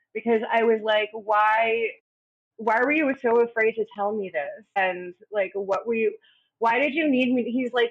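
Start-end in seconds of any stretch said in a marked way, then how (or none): 1.2-7.5 mock crying, hurt and teary, why drawn out. Retelling a husband coming out to her, imitating her own past crying. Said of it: "I immediately just started crying".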